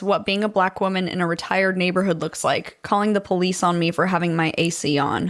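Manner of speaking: plain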